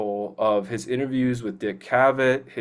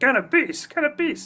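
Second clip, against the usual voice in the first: very high, squeaky movie-character voice. Talking about favorite movie impressions, quoting a character: impression of a movie character. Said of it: "I just love doing the impressions".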